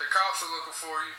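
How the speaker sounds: ordinary talk, nothing marked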